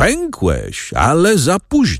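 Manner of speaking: very drawn-out, slow, sing-song, jeering mocking tone. A young man flings away the broken rope and calls out mockingly. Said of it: "zawołał szyderczo".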